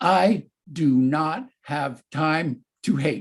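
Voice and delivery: confident, loud, ringing voice. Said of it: "confident, loud, ringing out".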